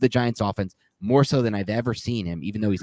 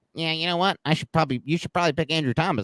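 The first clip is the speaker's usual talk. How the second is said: weird, odd nerdy voice, pitched up; 8 semitones higher than usual. Debating a football pick, the speaker mimics a football purist in a weird nerd voice. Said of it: "do a weird like football nerd voice".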